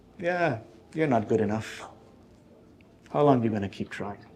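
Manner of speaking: hushed, half-whispered, taunting, doubtful tone. Voicing Shaitan nudging someone at a threshold: Shaitan half-whispering. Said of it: "he whispers to you".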